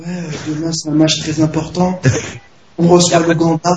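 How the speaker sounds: mock-honeyed, sugary little voice. Describing footage of Drogba, the speaker does Drogba's honeyed little voice. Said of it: "avec sa petite voix mielleuse".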